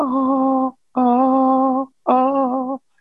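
very high, creepy looping chime sound. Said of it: "all creepily".

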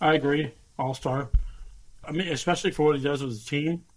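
speaking with mouth full, chewing. Podcast host answers a co-host's question, talking with mouth full. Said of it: "because you have food in your mouth".

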